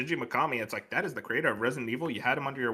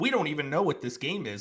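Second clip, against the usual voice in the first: put-on eager, enthused, excited, upbeat tone; 3 semitones higher than usual. Retelling what a game's director said publicly about the game, mock-excited tone. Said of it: "like in an excited tone".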